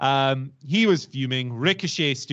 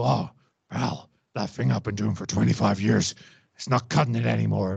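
low, rough, creaky, grinding voice; 4 semitones lower than usual. Imagining how Vince McMahon would look back on his show: Vince McMahon impression. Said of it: "Careful with that voice".

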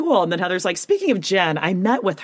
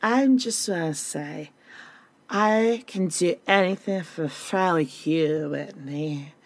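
put-on drunk voice; 2 semitones lower, 3 dB quieter than usual. Retelling what a drunk friend said at a gathering: imitating drunk Heather. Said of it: "And Heather's plastered".

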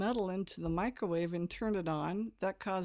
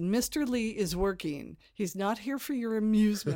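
play-acted strict, stern, no-nonsense teacher voice; 3 semitones higher, 6 dB louder than usual. Retelling escorting puppeteers past an actor: retelling own strict teacher talk. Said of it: "I'm being very strict".

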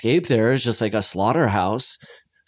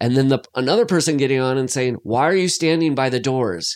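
usual speaking voice

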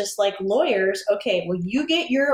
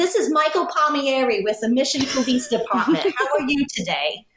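put-on Northeastern US accent; 5 semitones higher than usual. Retelling a phone call from a man who called her, heavy Northeastern accent. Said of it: "he's got this heavy Northeastern accent".

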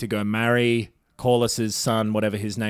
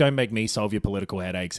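ordinary delivery

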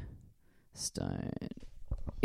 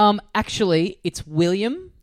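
plain

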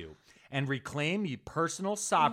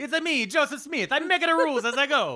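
very high, loud cartoon voice; 12 semitones higher, 7 dB louder than usual. Joking about Joseph Smith making up rules: Mario voice. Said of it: "It almost sounded like Mario".

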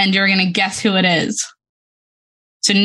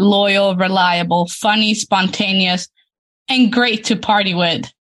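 usual speaking voice

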